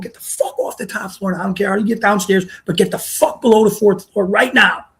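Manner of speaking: held-back, restrained yell. Retelling ordering the guys off the top floor, retelling a yell. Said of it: "and I'm yelling at them".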